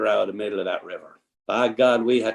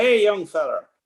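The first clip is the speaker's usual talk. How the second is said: mock very high shouted cowboy holler; 11 semitones higher than usual. Retelling how a ranch owner shouted from afar: imitating a rancher shouting. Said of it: "he starts shouting".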